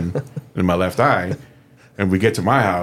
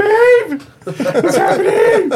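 very high, loud, put-on panicked cry; 6 dB louder than usual. Retelling what you said when things went wrong, in a put-on panic voice. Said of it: "I put on my panic voice".

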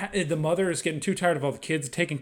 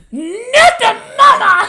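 put-on baby cry, very high, very loud, shrill; 15 dB louder than usual. Retelling a scene from the show Dinosaurs: imitating the Dinosaurs baby. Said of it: "the baby pauses for a second and goes".

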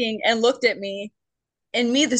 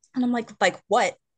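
ordinary talk, nothing marked

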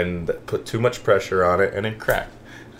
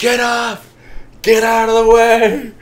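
shrill, very high-pitched, drawn-out screaming; 8 dB louder than usual. Retelling a fall on a ski hill: imitating dad screaming.

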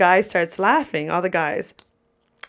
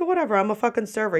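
usual speaking voice

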